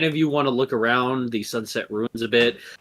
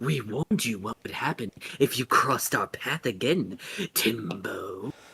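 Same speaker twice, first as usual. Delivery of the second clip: female snake creature voice; 7 dB quieter than usual. Voicing snake women who threaten a player: snake woman voice. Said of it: "Snake language, they're just like".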